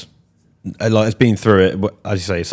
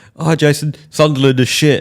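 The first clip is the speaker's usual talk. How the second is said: put-on drunken voice, higher; 8 semitones higher, 3 dB louder than usual. Retelling own words to a player after a draw: imitating own drunk self. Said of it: "'Cause I was drunk".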